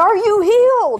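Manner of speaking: very loud, high-pitched calling out, acted. Retelling what a man asked a woman after praying over her, very loud voice. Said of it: "in a very loud voice".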